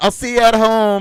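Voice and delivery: booming, loud, high, shrill shouting. A character yelling back at another while running out of the house: yelling. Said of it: "yelled at uh".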